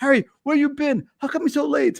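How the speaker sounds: clumsy, high-pitched, bad put-on Japanese accent. Retelling a woman from Japan angrily asking why he was late: bad Japanese accent. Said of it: "I can't do a Japanese accent".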